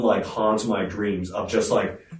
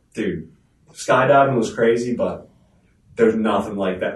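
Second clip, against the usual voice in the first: ordinary talk, nothing marked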